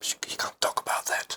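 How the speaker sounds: hushed whisper. Retelling a colleague's remark on the subway: imitating someone lowering his voice. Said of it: "he lowered his voice".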